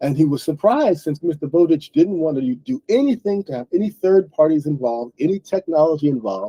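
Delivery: ordinary delivery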